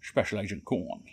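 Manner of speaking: bad, poor Scottish film-star accent. Playing Special Agent Korn, going for a Sean Connery impression. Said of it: "That's not a good impression of Sean Connery, because that's where I was heading".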